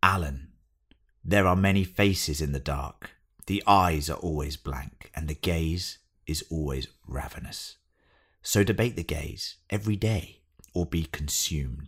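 solemn, grave, slow and serious reading voice. Reading a letter to Alan aloud, in a serious reading voice. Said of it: "I'll read it in a serious voice".

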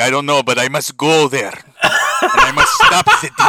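sudden, swooping put-on Spanish accent.

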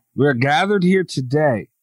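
plain

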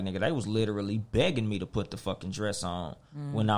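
normal talking voice

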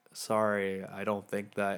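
quiet, dry, gentle, flat delivery. Retelling how she answered after being told something; retelling a quiet, dry reply. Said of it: "she said it so quietly and dry".

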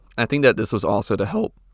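voice cracking while speaking. Speaker commenting on a TV episode, voice cracking. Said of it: "oh my voice cracked again".

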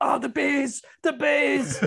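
very high, drawn-out, dragged yell. Joking about a Nicolas Cage beer: imitating Nicolas Cage yelling. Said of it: "you just hear him yelling".

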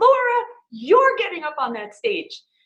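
acted-out yell. Laura retells how the salesperson yelled at her, retelling a yell. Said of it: "He yelled at me".

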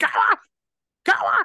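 urgent, loud, drawn-out scream at top of lungs. Retelling a character calling out from quicksand: imitating someone screaming at the top of his lungs. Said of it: "screaming at the top of his lungs".

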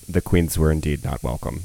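all-knowing storybook narrator voice. A speaker adds a line to the story in a narrator voice. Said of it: "in my narrator voice".

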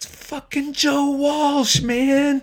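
put-on, very high, shrill childlike excitement. Retelling a man reacting on the couch into the camera; imitating childlike excitement. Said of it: "his childlike enthusiasm in that moment".

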